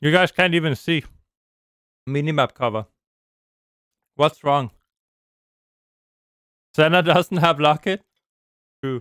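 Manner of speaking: talking with mouth full while eating. Commenting on a match while talking with mouth full. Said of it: "I am talking with my mouth full".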